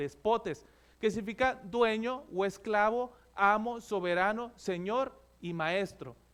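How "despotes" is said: "despotes" with the accent on the po. Explaining the greek word despotes: stress on po in despotes. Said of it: "ahí tiene el acento en la O".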